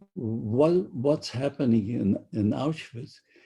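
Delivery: ordinary delivery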